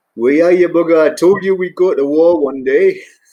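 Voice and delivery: put-on thick, broad Geordie accent, loud and high. Quoting a brilliant pilot's first words to you after about twenty years, in a broad Geordie accent. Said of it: "broad Geordie accent".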